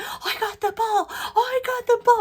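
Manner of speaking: mock very high-pitched yell. Retelling catching a ball at a game: retelling own yell. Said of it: "and I'm yelling".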